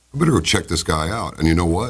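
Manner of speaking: normal talking voice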